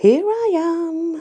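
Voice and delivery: very high, cheerful, happy voice. Eros answers an enraged Santa who demands to know where he is, happily. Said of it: "said Eros happily".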